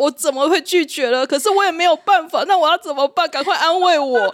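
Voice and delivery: very high, plaintive whining wail. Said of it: "在群组里面跟我们哀嚎很久".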